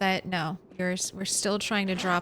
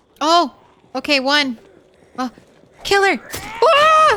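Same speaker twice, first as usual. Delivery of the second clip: shrill, drawn-out, booming, very loud, high-pitched yelling; 10 semitones higher, 13 dB louder than usual. Reacting during a close fight in a run: yelling. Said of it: "Sorry for the yelling".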